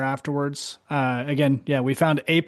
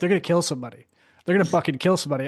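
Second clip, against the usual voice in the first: mock fury, much faster; 3 semitones higher than usual. Reminding the listener how they came over red-faced, imitating someone fuming. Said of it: "Your face is like fuming".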